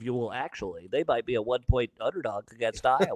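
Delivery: low, smart-aleck, know-it-all tone. Acting out a smart-ass response to a question: Josh Hodson voice. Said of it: "I just did a Josh Hodson voice".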